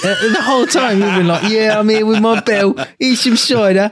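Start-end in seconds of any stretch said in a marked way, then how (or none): 1.5-3.9 put-on heaviest possible, laid-on, broad London accent. Host teases a guest about his accent tonight, quoting him: very strong London accent. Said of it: "the most fucking London accent".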